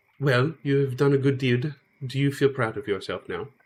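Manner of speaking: falsely sweet, hateful underneath. Voicing a council member who speaks up to the players: surface niceness hiding hatred. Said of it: "a air of niceness on the outside, but you can tell that there's hatred brewing underneath".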